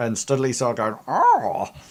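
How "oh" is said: high, zippy, quick voice. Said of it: "put my zippy voice on for Studley".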